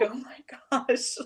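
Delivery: tearful, crying exclamation. Retelling seeing a student's pictures: imitating own past crying. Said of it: "I was crying".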